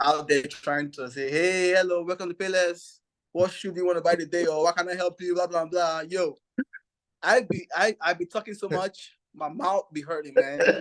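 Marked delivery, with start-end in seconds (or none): 1.3-6.0 put-on heavy Nigerian accent, rattled off quickly. Recalling greeting customers at Payless after arriving in the country, in a strong Nigerian accent. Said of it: "with a strong Nigerian accent".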